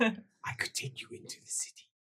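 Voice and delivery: barely audible, very quiet, breathy, hushed whisper. Voicing a character who offers to take the group into the city: whispering. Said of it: "She whispers".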